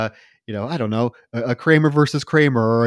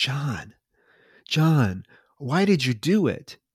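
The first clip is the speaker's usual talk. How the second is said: deliberate, slow, drawn-out half-whisper; 2 semitones higher, 4 dB quieter than usual. Retelling a film scene where a detective questions a dying man: imitating a half-whisper. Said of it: "Peter goes up to John and whispers to him".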